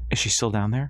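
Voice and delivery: ordinary talk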